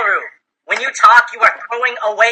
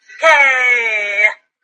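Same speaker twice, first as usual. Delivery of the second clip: put-on weak voice, fading away. Showing Wallaroo how they sounded, imitating Wallaroo's weak okay. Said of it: "Like your words just drifted into the wind".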